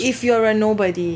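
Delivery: ordinary talk, nothing marked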